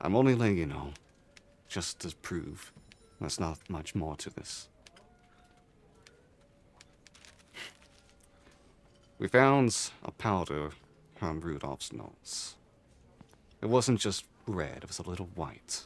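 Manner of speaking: hushed whisper. Voicing a character who kneels to whisper in a player's ear: whispering. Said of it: "And whisper in your ear".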